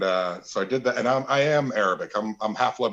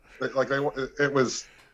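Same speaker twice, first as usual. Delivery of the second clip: ordinary talk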